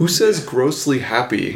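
ordinary talk

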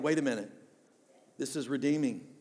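usual speaking voice

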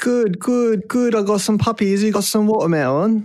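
put-on botched, very high English accent, half Cockney. Hosts open a bit about puppies and watermelons, bad english accent. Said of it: "I was really trying to think of an English accent".

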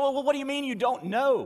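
high, loud, incredulous angel voice.

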